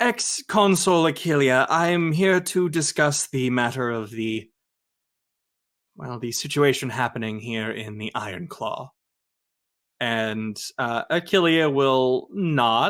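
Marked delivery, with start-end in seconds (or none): 0.0-8.9 proper, stiff, formal, official-sounding delivery.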